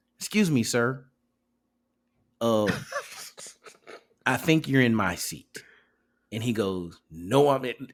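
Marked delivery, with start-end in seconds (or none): 0.2-5.6 put-on polite, professional corporate voice. Retelling finding someone in their seat, speaking in a put-on corporate voice. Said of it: "I put on my corporate voice".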